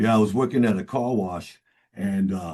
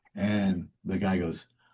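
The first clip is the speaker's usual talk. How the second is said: ordinary talk, nothing marked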